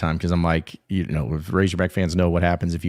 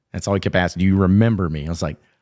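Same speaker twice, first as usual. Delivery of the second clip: ordinary delivery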